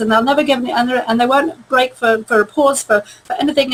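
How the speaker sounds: very fast, rushed, stumbling talk with no pauses. Showing how stressed people talk without pausing: talking really fast. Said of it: "they'll probably be talking really like this".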